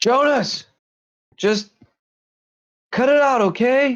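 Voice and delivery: very high, carrying yell. Narrating a game scene, voicing a character who shouts at another character, shouting. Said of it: "You hear Al shout".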